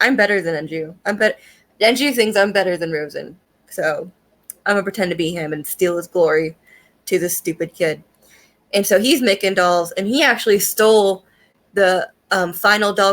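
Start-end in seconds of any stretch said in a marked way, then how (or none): none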